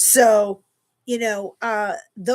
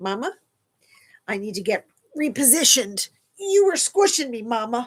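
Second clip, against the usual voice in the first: put-on talking dog voice; 2 semitones higher than usual. Introducing her two pets to everybody, voicing Luca the dog. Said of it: "he's like".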